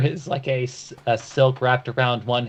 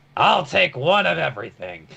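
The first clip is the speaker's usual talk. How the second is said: grand, bold, rough-edged, swooping captain voice; 3 semitones higher than usual. Retelling how he orders at a restaurant, in a bold captain's voice. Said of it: "declares boldly in his captain's voice".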